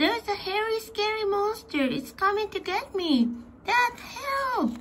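very high yell with drawn-out word. A boy jumping on his bed calls his dad upstairs as a trick, yelling. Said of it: "he yelled".

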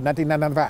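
rattled off very fast, tossed straight off. Advertising a Cadillac SRX, saying the price '$19,995' very fast. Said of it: "I just like to say that fast because it kind of sounds good".

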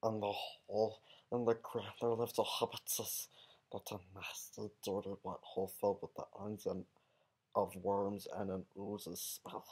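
put-on creature voice, kept soft and hushed. Reading the first chapter of the first Hobbit book aloud, in Gollum voice. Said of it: "doing it in Gollum's voice".

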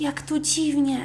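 hushed whisper. Narrator reads a girl whispering to her brother in the cellar; whispering. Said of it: "szepnęła dziewczynka do brata".

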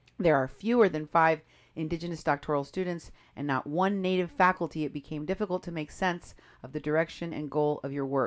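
ordinary talk, nothing marked

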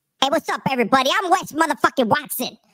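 very high, squeaky voice. Imitating a voice from before the alleged steroids: Wes Watson's old voice. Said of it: "Remember his voice was like this?".

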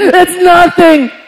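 mock very high, shrill, loud, tearful crying voice. Retelling a crying sister's answer, imitating a crying sister. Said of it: "She's crying".

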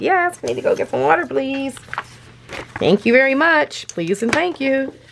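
high, polite talking-dog voice. Speaking for the dog answering back to viewers, doggy voice. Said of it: "doing my doggy voice".

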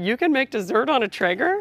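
mock knowing, teasing, sarcastic tone. Quoting her dearest friend's question to her, retelling a sarcastic question. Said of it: "she's being sarcastic when she asks me these questions".

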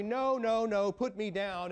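mock drawn-out screaming little kid voice, slow. Retelling a Bible scene, the child Jesus picks up: imitating a screaming child. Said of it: "screaming at everybody".

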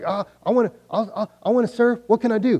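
put-on high, eager young girl voice, blurted out. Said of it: "she's like".

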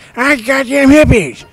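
bad cartoon-kid voice, high, loud, swooping all over. Wishing to dress up before a battle, doing a terrible Cartman impression. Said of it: "That was a terrible impression".

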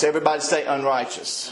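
ordinary delivery

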